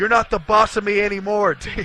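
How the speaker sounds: screamed words. Retelling screaming at a player slumped out of a truck: imitating own past scream. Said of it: "I screamed at this naked Dean Hall".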